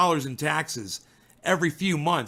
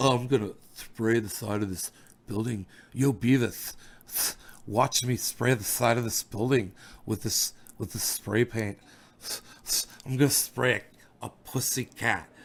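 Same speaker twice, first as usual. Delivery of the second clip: comic cartoon troublemaker voice; 6 semitones lower, 5 dB quieter than usual. Mocking two listeners as cartoon characters: imitating Butthead. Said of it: "You guys are Beavis and Butthead".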